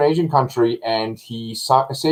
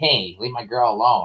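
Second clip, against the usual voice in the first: put-on nasal voice, lower; 2 semitones lower than usual. Speaker imitates a big football-team bully telling him off: imitating a nasally voice. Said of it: "his voice was kind of nasally".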